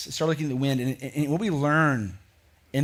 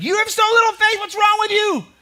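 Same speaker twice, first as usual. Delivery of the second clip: very high, raised scolding tone; 7 dB louder than usual. Showing how the speaker reads a scripture passage, in a scolding tone like to kids. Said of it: "read them with an attitude, as if we're talking to our kids".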